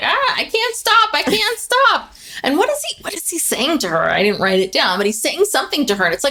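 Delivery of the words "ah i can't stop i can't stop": put-on, very high, very slow, drawn-out, helpless panicked cry. Retelling a scene of a woman sliding down a hill, imitating her panicked cry. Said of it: "She's like".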